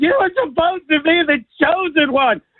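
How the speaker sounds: mock sobbing lament, very high-pitched and tearful. Quoting the Star Wars scene where Anakin fights Obi-Wan: imitating crying Obi-Wan. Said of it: "Ewan McGregor starts crying, going".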